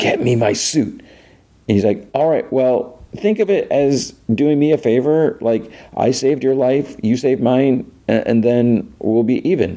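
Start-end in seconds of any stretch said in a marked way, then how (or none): 0.0-1.0 whispered and slower. Retelling a scene between two people, quoting her line: retelling a whisper. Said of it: "And she whispers".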